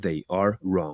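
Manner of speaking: low, slow, stern delivery. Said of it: "met with a stern".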